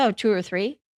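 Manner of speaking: ordinary talk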